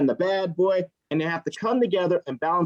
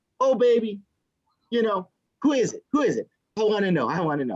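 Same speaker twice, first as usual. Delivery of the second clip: gushing, all-in eager, swooping excited voice; 3 semitones higher than usual. Acting out a mom's reply to her child's news, imitating an eager mom. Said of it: "She's all into it and everything".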